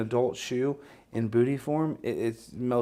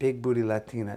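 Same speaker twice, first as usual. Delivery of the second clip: put-on Spanish accent. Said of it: "Was that Antonio Banderas that just said that?".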